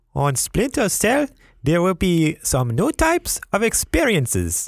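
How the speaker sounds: put-on very high, swooping, sing-song French accent. Co-hosts try a voice reading a Guillemot interview quote; Guillemot impression, high-pitched. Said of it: "He has a very high-pitched voice".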